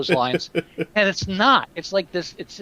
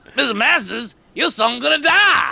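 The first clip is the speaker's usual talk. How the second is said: slow, rasping, gravelly drawl, pitched up; 6 semitones higher, 3 dB louder than usual. Acting out a movie scene, threatening a father: gravelly Slappy voice. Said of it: "the guy with the gravelly voice".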